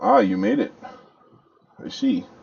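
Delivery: put-on elderly male voice. Voicing a very old wizard whose sound finally comes through; Hallister Blackcloak voice. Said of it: "the image of the very old man".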